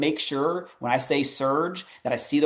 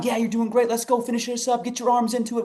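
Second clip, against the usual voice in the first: put-on high, encouraging hollering; 9 semitones higher than usual. Recalling cheering on a varsity kid from the sidelines, retelling hollered cheering. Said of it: "I'm sitting there hollering and screaming and cheering".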